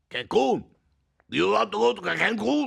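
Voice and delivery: poor, way-off put-on Spanish accent. Bantering with others on a show, in a bad fake spanish accent. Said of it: "Way off on his accent".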